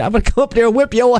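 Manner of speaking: high, fast menacing delivery.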